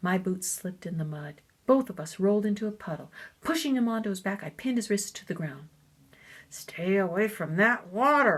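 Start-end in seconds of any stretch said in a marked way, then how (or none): 6.5-8.4 slow, raised words forced through clenched teeth. Narrator reads a character pinning a boy in the mud, speaking through clenched teeth. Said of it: "I said between clenched teeth".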